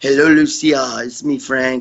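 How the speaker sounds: put-on French accent. Retelling a recorded birthday wish for Lucia, doing a Frank McGrath impression. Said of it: "He's got that French accent and shit".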